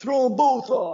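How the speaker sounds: gruff male yell, high, loud and slow. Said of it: "I hear a male voice saying".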